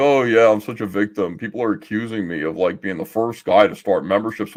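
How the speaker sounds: mock, biting, dripping sarcastic delivery. Imitating the person being criticized over memberships: imitating someone being sarcastic. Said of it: "you're sarcastic".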